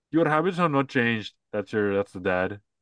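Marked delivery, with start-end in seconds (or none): 0.1-1.3 Indian accent, partly put-on. Retelling a story, the speaker voices the dad's line in an Indian accent. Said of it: "are you doing an Indian accent".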